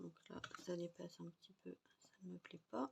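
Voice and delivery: speaking very softly. With nobody around listening, the speaker talks on in a whisper. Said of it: "Je parle tout bas".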